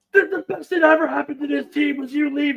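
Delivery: full-blast screaming, very loud, shrill, very high. Retelling the other team's captain screaming at a former teammate: imitating someone screaming. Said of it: "screaming at Jerry".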